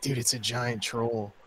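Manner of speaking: hushed, whispered speech. Player in character whispering to a fellow party member, whispering. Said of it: "I'm gonna whisper to Roscoe".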